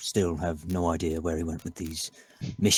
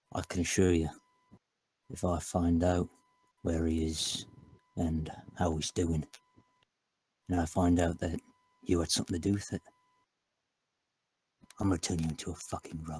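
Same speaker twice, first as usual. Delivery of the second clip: hushed, kept-low quiet voice; 3 dB quieter than usual. A character speaks a quiet, menacing promise to a suspect in a scene, delivered with the voice kept down. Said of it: "I'm gonna keep my voice down".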